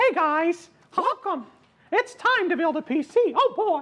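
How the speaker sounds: pitched way up and slow. Doing an intro about building a PC: Mickey Mouse voice. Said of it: "it's Mickey Mouse".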